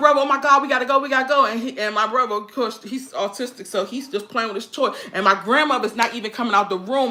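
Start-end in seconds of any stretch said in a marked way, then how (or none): 0.2-1.4 play-acted crying, frantic, panicked, urgent sobbing. Retelling what the speaker cried out to a brother after running: retelling crying panic. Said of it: "I'm crying".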